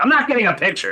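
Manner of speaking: very high, surly shouted line. Retelling a TV scene about shaved ice: imitating a surly captain yelling. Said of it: "the surly police captain who yells everything".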